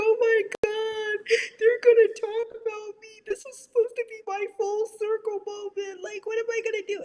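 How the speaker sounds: very high, tearful, crying panic. Recalling breaking down when the reunion episode audio failed; retelling own crying. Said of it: "breaking down, crying like".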